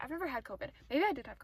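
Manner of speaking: racing, very fast chatter, words tumbling out. A student chatting about school, talking very fast. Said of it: "I'm talking so fast right now".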